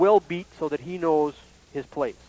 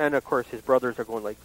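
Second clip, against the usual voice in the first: ordinary talk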